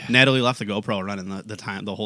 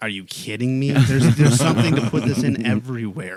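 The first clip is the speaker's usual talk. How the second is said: loud, dry, sarcastic incredulity; 3 semitones higher, 7 dB louder than usual. Retelling a remark to a manager searching for a container: retelling own sarcastic remark. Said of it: "sarcastically was like".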